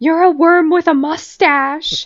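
mild, high-pitched yelling. Speaker retells one cast member yelling at another, retelling a yell. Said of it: "James Kennedy yelled at him".

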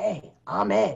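rough, scratchy, creaky voice. Retell Ed coming up to you at soundcheck and introducing himself, in Ed's scratchy voice. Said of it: "with his scratchy voice".

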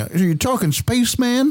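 very high mock yokel voice. On a podcast, mimicking how disbelieving people react, in a yokel voice. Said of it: "Can you do that voice for the rest of the pod?".

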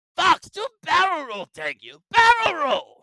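shrill, booming drawl with swooping, stretched words. Imagining the Peppy Hare casting done differently: Mark Hamill Joker voice. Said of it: "he would go Joker".

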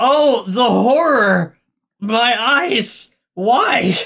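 mock horror, high, very slow and drawn out. Retelling how a viewer reacts to a movie scene: acting out horrified viewer reaction. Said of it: "you watch it and you just go".

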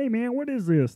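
put-on very high, froggy voice with Texan accent. Talking about jumpers learning their gear, speaker acts out a jumper's question in a Chris D'Elia stupid voice. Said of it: "sounds like Kermit the Frog moved to Texas".

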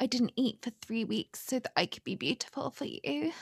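high, seductive character voice with lifted pitch. Describing a scene from a show, doing a mock-seductive Cassie impression. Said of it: "But it's really seductive".

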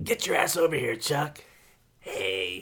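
tough biker-chick smoker voice. Imitating a woman they both remember calling to Chuck: smoker biker-chick voice. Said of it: "That smoker and biker chick voice".

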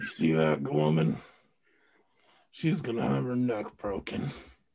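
very low, deep voice spoken through teeth. Joking about Million Dollar Baby in Clint Eastwood voice through teeth. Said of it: "do the Clint Eastwood talk where you talk through your teeth".

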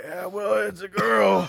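bad, fake smoker's voice, rough, raspy, high. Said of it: "a really bad smoker's voice".

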